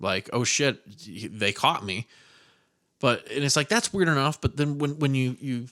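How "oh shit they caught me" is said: usual speaking voice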